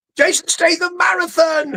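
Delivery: mock shouting. Describing a man who plays a movie on TVs all over his house, retelling a shout. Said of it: "And he just shouts".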